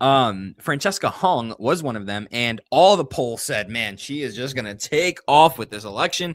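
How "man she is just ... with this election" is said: ordinary delivery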